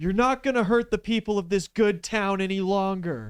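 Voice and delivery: shrill, very high, loud heroic scream. Voicing Midoriya squaring up to Overhaul: screaming as Midoriya. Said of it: "he screams out".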